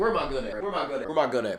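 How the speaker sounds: menacing mutter.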